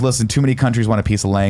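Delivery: ordinary delivery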